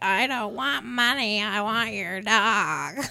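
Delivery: put-on nasty, spiteful old lady voice, "dog" drawn out. Quoting the hated neighbor woman, in a mean old lady voice. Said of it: "That was a great, mean old lady".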